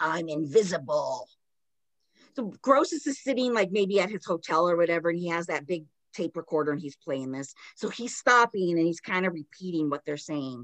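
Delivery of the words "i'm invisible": put-on growly voice, pitched lower. Retelling a tape recording of the girls: imitating Janet's growly voice. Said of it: "in that growly again".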